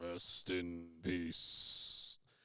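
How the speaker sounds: very quiet, dark, barely audible mumble. Retelling a wrestler's promo: imitating the Undertaker mumbling darkly. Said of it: "mumbling some darkness and something".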